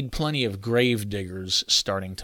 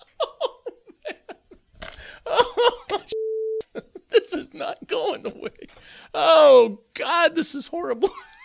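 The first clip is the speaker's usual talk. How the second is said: helpless laughter, very high, slow and drawn-out. Trying to get through a recording take and breaking up: can't stop laughing. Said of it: "I got to quit laughing".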